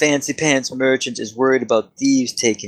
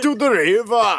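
put-on Austrian accent, higher; 11 semitones higher than usual. Answering how to say river in Arnold's accent: Arnold accent. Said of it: "how do you say river in Arnold's accent?".

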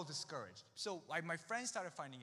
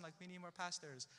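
plain

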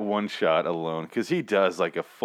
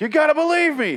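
panicked high-pitched screaming; 8 dB louder than usual. Retelling a TV scene of a man screaming at a cop: imitating someone screaming. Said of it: "he's sitting there screaming at the cop like".

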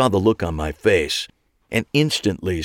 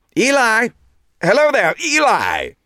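put-on too-loud, nasal British accent, very high pitched; 3 dB louder than usual. Reading a story, someone calls after Eli across the hospital lobby in a nasally British accent. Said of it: "The nasally British accent could only belong to one person. ... The nasally British accent could only belong to one person. ... he said in a voice way too loud for the setting".

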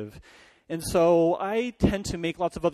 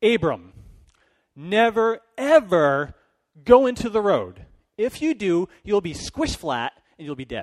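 raised, stern voice; 2 semitones higher, 5 dB louder than usual. Retelling a girl telling her brother a rule, in her best mom voice. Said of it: "She's using her best mom voice".

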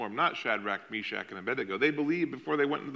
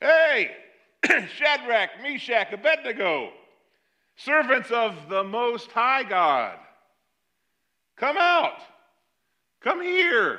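loud, very high-pitched, rising shout; 10 semitones higher, 8 dB louder than usual. Telling the furnace story, voicing him calling the men out, retelling a loud yell. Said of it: "he yells out in a loud voice".

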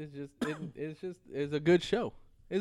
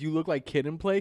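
usual speaking voice

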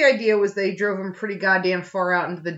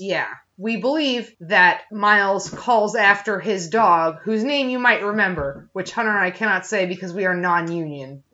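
normal talking voice

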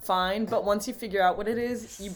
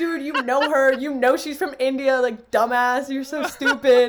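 raised, pitched-up, berating tone; 5 semitones higher, 8 dB louder than usual. Retelling berating a friend about a roommate: imitating own berating. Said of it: "And I started berating him".

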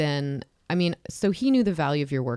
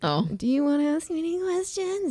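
mock strained voice, much higher pitch; 13 semitones higher than usual. Retelling a mom offering to answer any questions, imitating mom's strained voice. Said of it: "It was like her voice was strained".

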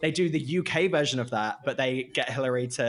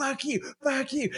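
mock rage-filled shout, pitched very high; 13 semitones higher than usual. Retelling a driver honking past, imitating a furious driver yelling. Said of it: "He was just incensed with rage".

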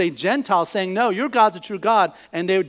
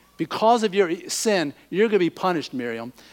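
ordinary delivery

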